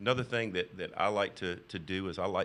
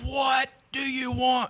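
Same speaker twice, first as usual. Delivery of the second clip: shrill, high, stretched-out screaming yell; 9 dB louder than usual. Retelling a phone call with a woman: imitating a woman screaming. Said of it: "Just screaming to the top of her lungs".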